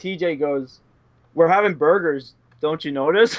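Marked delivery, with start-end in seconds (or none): none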